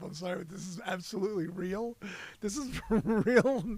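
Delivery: talking through laughter. Reading a strange news story aloud, laughing while talking. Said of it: "I'm laughing my ass off".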